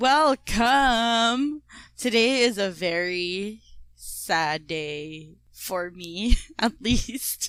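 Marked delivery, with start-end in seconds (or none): 2.0-7.5 slow words broken up by laughing. A speaker welcomes the audience, laughing while speaking. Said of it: "Why am I laughing?".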